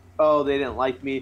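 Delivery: normal talking voice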